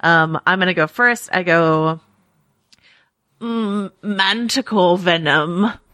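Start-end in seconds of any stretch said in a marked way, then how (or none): 3.4-5.7 put-on old man voice. Friends taking turns doing Game of Thrones impressions, going first: Maester Pycelle impression. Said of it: "That's my Maester Pycelle impression".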